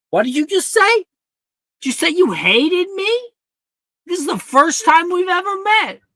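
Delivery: very high, shrill yelling. In a skit, reacting to a stranger who just said they hate it here, yelling. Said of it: "Why are you yelling at me?".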